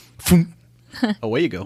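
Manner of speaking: put-on Boston accent. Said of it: "your least offensive Boston accent".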